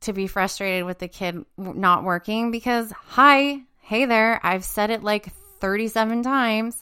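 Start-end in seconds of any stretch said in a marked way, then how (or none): none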